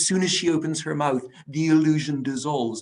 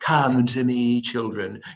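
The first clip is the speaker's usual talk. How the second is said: low, purring, sinister voice; 3 semitones lower than usual. Imitating the voice a character was expected to have: low purring sinister voice. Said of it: "this low, purring, rather sinister voice".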